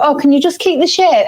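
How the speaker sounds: mock timid mouse voice. Retelling apologising at the salon, imitating own mousy voice. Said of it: "being such a mouse about it".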